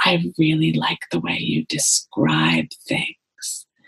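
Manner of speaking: slow, drawn-out stage whisper. Retelling a shy child's compliment after a reading: imitating a barely audible whisper. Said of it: "in a barely audible whisper".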